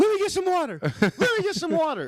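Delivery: put-on shrill, very high, loud swooping scream. Retelling a fight where his mouth went dry, retelling a scream. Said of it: "And I was screaming".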